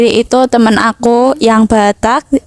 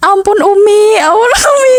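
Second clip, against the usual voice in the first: acted, piercing, very high, drawn-out scream; 10 semitones higher than usual. Retelling how a friend screamed while being punished: imitating a friend's scream. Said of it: "teriaknya kayak".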